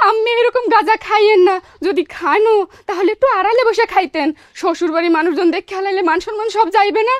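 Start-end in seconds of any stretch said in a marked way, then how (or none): none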